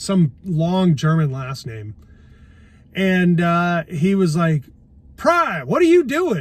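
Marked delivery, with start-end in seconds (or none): 5.2-6.4 loud, booming, high drill sergeant yell. Retelling a drill sergeant questioning him while he looked for formation, imitating a booming drill sergeant. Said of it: "really loud, booming voice".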